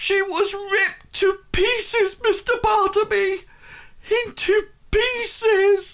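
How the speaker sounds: very high, slow, tearful voice breaking toward sobs. Voicing a woman in tears speaking to the listener's character, tearful, starting to sob. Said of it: "she sort of like starts to sob".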